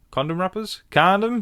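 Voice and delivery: condom in American pronunciation. Host reacting to an update about Kelly, in an American accent. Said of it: "I did that in my American accent".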